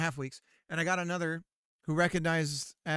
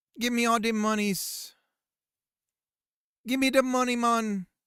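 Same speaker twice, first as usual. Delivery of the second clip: loud, high, terrible put-on Jamaican accent; 8 semitones higher, 7 dB louder than usual. Demanding money in a joking bit, in a terrible jamaican accent. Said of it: "Sorry for my terrible Jamaican accent".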